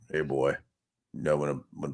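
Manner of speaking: very deep, soft, low grandfather voice. Speaker imitates what his grandfather used to say, in his much deeper voice. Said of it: "actually had a much deeper voice".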